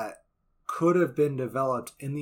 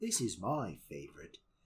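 put-on English accent, lower and quieter; 6 semitones lower, 9 dB quieter than usual. Describing a film's opening, imitating an english narrator. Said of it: "there's this English narrator at the beginning".

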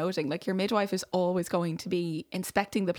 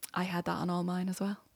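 knowing, sage-like voice of wisdom; 5 dB quieter than usual. Retelling the birthing woman's mum leaning over: imitating a voice of wisdom. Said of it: "like the voice of wisdom".

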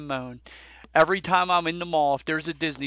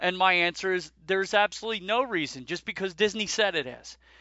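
ordinary talk, nothing marked

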